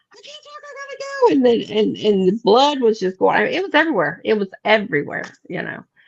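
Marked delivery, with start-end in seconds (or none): 0.2-1.4 mock, very high, frantic, sobbing, panicked crying scream. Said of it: "I'm just screaming and crying".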